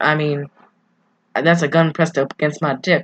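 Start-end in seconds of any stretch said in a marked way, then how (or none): none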